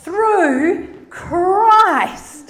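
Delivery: big, very loud, grand delivery. Speaker showing how to stress a verse, small then big: said big. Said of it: "That's big".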